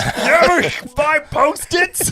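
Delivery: very slow, high, loud character voice, every word dragged. Demonstrating how to talk from behind the camera, in a Grover voice. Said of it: "I don't know why I'm using this voice".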